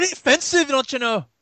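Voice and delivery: fake Scottish accent, laid on thick. Joking about offending listeners, in a put-on accent. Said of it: "don't do that accent".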